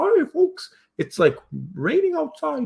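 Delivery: high squeak, slow and swooping. Mickey answers someone in their room who asked about the weather, in a bad Mickey Mouse voice. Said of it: "That's not the best Mickey voice".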